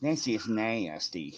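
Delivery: soft, low cartoonish voice. Speaker offers Joe a voice he might know: Cleveland voice. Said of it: "Let me let me do a voice you might know".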